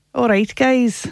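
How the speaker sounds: attempted Scottish accent. Asked to do the Scottish accent, greeting the guys in an attempted Scottish accent. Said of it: "Can you do your Scottish accent?".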